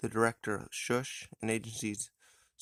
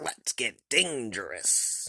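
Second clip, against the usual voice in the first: widely swinging pitch, like a bad cartoon hero. Introducing the feature cartoon, quoting its catchphrase in a Darkwing Duck impression. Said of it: "terrible impression".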